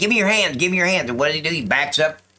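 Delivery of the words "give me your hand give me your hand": high screaming, called out twice. Retelling giving commands to a man reaching into a van: retelling own screaming. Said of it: "I'm screaming".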